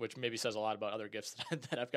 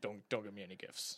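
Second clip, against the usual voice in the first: mock-strict voice, lower and quieter; 2 semitones lower, 6 dB quieter than usual. Talking about gift-giving in the family, imitating strict dad. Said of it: "That's my dad impression".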